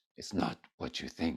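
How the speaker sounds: very soft, deep, breathy, sultry near-whisper. Retelling what a woman answered when the speaker asked her a question; imitating a deep, sultry voice. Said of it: "she says in a very deep and sultry voice".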